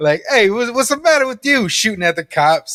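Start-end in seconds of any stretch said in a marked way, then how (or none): 0.3-1.7 very high-pitched, put-on New York accent. Imagining some guy talking: new york accent. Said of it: "like a guy with like a New York accent".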